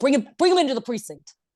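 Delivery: put-on grizzled Philadelphia precinct-cop accent. Acting out a grizzled cop character: put-on grizzled Philly cop voice. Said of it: "the grizzled cop who's, like, maybe just a little overweight from Philly".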